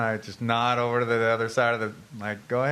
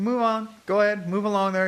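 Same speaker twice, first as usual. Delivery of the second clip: mock very high, condescending, talking-down voice; 9 semitones higher than usual. Retelling a confrontation, talking to a man like to a little kid. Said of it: "Start talking to him like he's a little kid".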